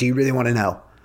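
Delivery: mock irritated, annoyed, pissed-off tone. Retelling her reply to being pestered about santa, mock-irritated. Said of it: "And she's pissed off".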